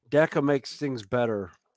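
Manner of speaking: ordinary talk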